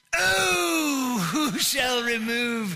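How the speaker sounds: very slow put-on English accent, stretched oh. A pastor teaching, saying the line in a put-on english accent. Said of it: "really better spoken in sort of an English accent".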